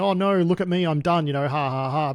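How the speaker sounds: mock sarcastic tone. Retelling a post someone put in a Telegram channel: imitating a sarcastic tone. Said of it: "being sarcastic".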